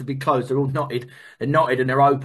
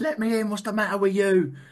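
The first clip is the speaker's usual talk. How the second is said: acted screaming, higher pitch; 6 semitones higher than usual. Speaker relives being thrown out of the house while kids cry, retelling a scream. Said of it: "I'm screaming outside the house".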